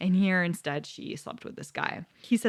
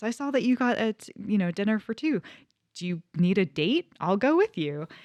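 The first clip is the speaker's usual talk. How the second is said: put-on, thick French accent. Retelling what the actress model said to him: thick French accent. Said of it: "she's got a very thick French accent".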